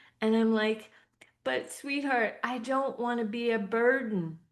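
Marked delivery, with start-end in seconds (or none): 1.4-4.3 words spoken through tears. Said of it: "I come to him in tears".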